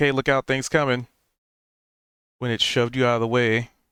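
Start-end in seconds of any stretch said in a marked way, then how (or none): none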